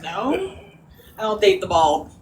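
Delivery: play-acted, disgusted, dismissive, recoiling brush-off. Retelling a reply to a server who asked about being a couple: imitating a disgusted tone. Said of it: "She said it like you had syphilis".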